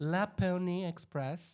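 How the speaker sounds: failed put-on Québécois accent. Answering a quiz question after being told to say it: bad attempt at quebec accent. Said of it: "c'est pas du tout du québécois".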